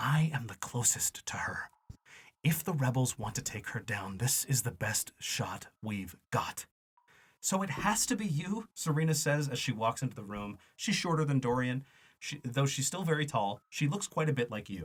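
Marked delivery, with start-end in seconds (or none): 0.0-6.7 hushed, urgent whisper, barely voiced. Narrating a story, a man pouring himself a drink speaks in a whisper. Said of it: "His voice shifts to a whisper".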